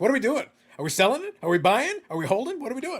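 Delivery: high, loud, mock-urgent game-show host voice.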